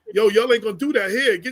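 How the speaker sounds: usual speaking voice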